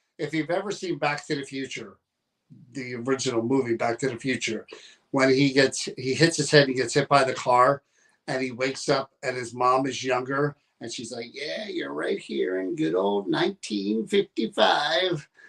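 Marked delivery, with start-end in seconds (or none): 11.3-15.2 put-on tired, creaky, swooping elderly woman voice. Speaker quotes a movie mom's line in an old lady voice. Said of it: "there's that old lady voice again".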